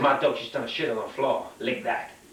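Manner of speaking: ordinary talk, nothing marked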